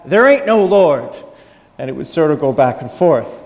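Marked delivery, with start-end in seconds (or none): 0.1-1.1 angry, loud, shouted yell. Telling a story of an atheist yelling back at a lady: retelling a yell. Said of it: "then he'd yell back".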